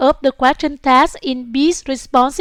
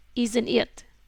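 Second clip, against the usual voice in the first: isn't it dropping at the end; 3 semitones lower, 10 dB quieter than usual. Question tag when the answer is known, falling intonation on isn't it. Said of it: "We use foreign intonation on question text when we already know the answer".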